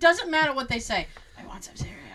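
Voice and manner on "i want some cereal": put-on very quiet, creepy whispered little-child voice. Describing how creepy little kids whispering sounds: imitating a little kid whispering. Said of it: "When little kids whisper and they're like".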